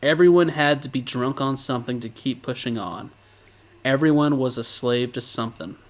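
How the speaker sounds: normal talking voice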